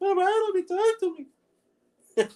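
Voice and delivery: very high, slow, drawn-out puppet voice. Speaker redoing a bit from a short video, in a puppet voice. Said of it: "You sounded like a puppet".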